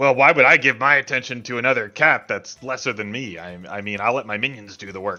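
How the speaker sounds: loud, rough, gravelly cat character voice. Voicing a cat who explains why it did nothing: gravelly cat voice. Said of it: "really gravelly now".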